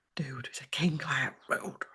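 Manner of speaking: soft, unvoiced whispered aside.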